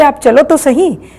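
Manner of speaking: plain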